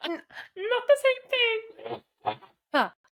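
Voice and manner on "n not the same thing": very high, nervous, sickly-sounding frog puppet voice. Answering a question back and forth, the speaker replies in a Kermit the Frog voice. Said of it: "You got a pretty good Kermit".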